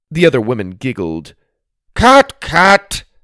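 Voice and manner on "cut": very loud, shrill, high-pitched shout. The man behind the camera stops the reality TV scene, shouting. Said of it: "shouted the man behind the camera".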